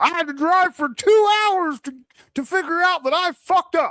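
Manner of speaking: put-on yelling. Retelling how someone yelled at their subs: imitating someone yelling. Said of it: "you're over here yelling at your subs".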